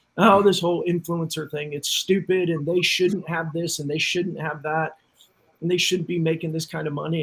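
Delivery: plain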